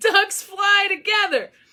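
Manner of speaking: very high put-on scream. Retelling cheering all game at a hockey shootout: retelling own screaming. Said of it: "I'm screaming".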